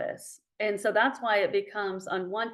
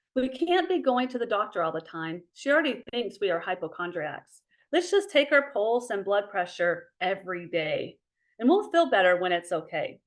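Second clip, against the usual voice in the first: ordinary talk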